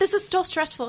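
put-on yelling. Retelling how he yelled at her to take the test: imitating him yelling. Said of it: "he started fucking yelling at me".

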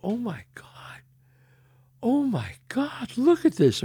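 high, emotional, teary voice, on the verge of tears. Retelling a proposal at the canyon, quoting Jana: imitating Jana tearing up. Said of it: "she starts to, like, tear up".

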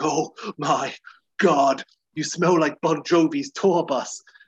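mock gagging while speaking. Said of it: "she starts by gagging and heaving".

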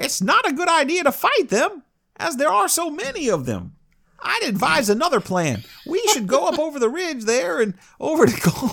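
put-on very high, shrill old prospector voice. Telling a saga aloud, giving Thorhall's advice to the men: Thorhall as old prospector. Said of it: "like an even more shrill Don Knotts".

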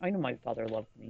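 put-on, very sorrowful, mournful, low, very sad. Describing a documentary, acting out a man's line, retelling it very sadly. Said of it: "very sadly saying".

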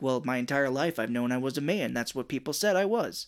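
ordinary talk

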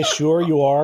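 ordinary talk

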